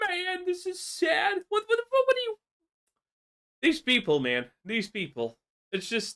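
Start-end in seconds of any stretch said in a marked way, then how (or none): 0.1-1.4 put-on, high, slow, tearful fake sobbing voice. Speaker mocks someone who attacks people, then sits there crying: imitating someone crying. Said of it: "now you're sitting here crying and saying".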